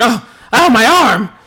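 put-on, very high, very loud yelp of pain. Retelling a backstage interview where the Giant hurts the interviewer, imitating Gene Okerlund in pain. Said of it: "It's causing Gene Okerlund a great deal of pain".

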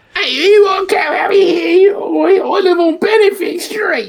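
put-on very hard Cockney accent. Joking about appearing on a TV show: put-on super hard Cockney accent. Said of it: "the super hard Cockney accent".

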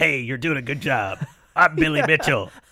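supportive, uplifting delivery. Retelling how Billy Mitchell would call people: imitating Billy Mitchell. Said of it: "He'd be like".

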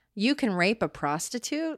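usual speaking voice

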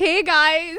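play-acted bright, very loud, high peppy voice. Recalling how the podcast intro was recorded: imitating own peppy intro. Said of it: "how peppy we were in the intro".

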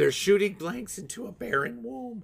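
voice breaking and cracking up high. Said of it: "your voice really cracked".

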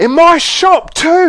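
shrill, very high, very slow stretched-out yelling. A shopkeeper in his own shop, yelling. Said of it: "he yelled".

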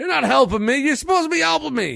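put-on yelling. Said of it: "yelling at him".

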